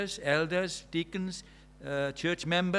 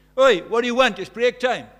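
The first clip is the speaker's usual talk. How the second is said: very loud, high-pitched bellowing yell; 6 semitones higher, 14 dB louder than usual. Retelling how a teacher shouted to a pupil on the stairs at break, retelling a shout. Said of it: "just shouts".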